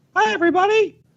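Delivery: very high, squeaky cartoon voice. A podcast host greets his two staff members and everybody, in a Mickey Mouse voice. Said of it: "That was my Mickey Mouse voice".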